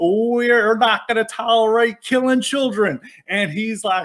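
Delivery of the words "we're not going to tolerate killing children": big preaching voice, We're drawn out. Retelling a speaker whipping up a crowd: imitating a mega church pastor preaching. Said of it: "talking like a mega church pastor".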